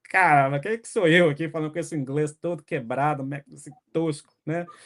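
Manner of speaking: usual speaking voice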